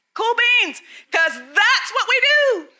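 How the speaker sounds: loud, emphatic high voice. A presenter addressing a crowd about an exhibit, loud.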